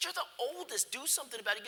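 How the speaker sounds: exasperated, frustrated hollering. Recalling being six, the speaker tells the older brother to act: retelling yelling at brother. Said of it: "I'm yelling at my older brother".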